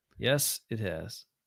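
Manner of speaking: slow, drawn-out, low, soft drawl.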